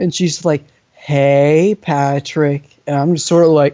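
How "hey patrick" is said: cat-like cooing purr with "hey" drawn out. Imitating how a woman walked up and greeted him, cooing, purring voice. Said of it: "she gets that coo in her voice, sounds like a cat purring".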